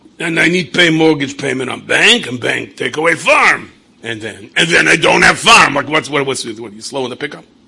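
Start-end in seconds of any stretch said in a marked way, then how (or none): 0.2-5.8 booming, very loud, slow, deliberate farmer voice. Retelling a phone call, imitating the farmer on the phone. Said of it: "He goes".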